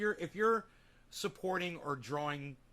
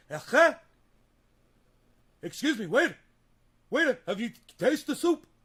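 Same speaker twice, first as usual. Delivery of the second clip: put-on very loud, high-pitched old man character voice; 8 semitones higher, 11 dB louder than usual.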